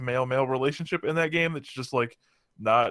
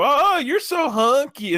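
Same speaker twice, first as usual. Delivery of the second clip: very high, slow, raised voice; 13 semitones higher, 7 dB louder than usual. Retelling what two stereotyped game characters say on meeting you: imitating the two stereotype characters. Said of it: "Those two dudes that just come up and go".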